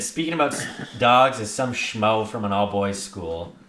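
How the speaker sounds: ordinary talk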